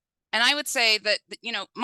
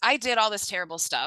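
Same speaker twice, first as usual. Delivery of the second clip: normal talking voice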